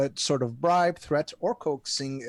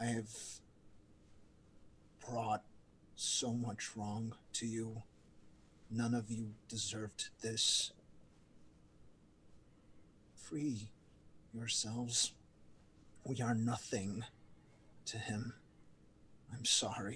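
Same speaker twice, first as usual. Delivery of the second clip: whispered, very quiet, barely audible; 4 semitones lower, 14 dB quieter than usual. Playing a character embracing cult members, whispering to them: whispering in character. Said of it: "I whisper to them".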